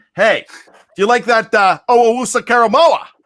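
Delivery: put-on Pittsburgh Yinzer accent. Acting out what you want to hear Pittsburgh fans say about a Steelers pick, in a Yinzer accent. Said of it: "you don't love my Yinzer accent".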